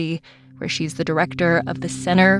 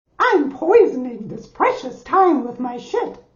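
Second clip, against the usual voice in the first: put-on cartoon mouse voice; 8 semitones higher than usual. Demonstrating how to say a negative thought: Mickey Mouse voice. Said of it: "in the voice of a cartoon mouse".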